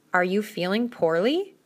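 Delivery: ordinary delivery, nothing marked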